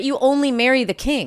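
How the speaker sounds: ordinary delivery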